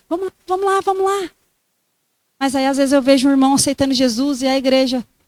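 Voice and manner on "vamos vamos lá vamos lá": acted-out shout, pitched higher. Imagining a father at the gate seeing his son coming: imitating a father shouting. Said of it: "ele gritando".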